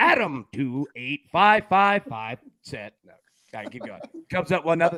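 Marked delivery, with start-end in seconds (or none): 0.0-2.9 very slow, machine-like robotic AI read-out. Mimicking how another speaker read out a post: imitating robotic AI reading. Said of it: "you read it like A I".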